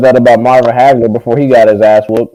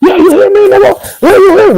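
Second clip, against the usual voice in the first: mock top-of-the-lungs scream, very high and shrill. Retelling a press conference: imitating Angel screaming. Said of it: "he was screaming at the press conference".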